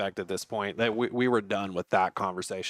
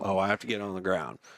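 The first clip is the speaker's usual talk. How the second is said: plain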